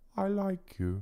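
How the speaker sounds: tiny, high-pitched little dragon creature voice. Voicing a tiny dragon only the speaker can hear, in a little voice. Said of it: "in a little voice that only I can hear".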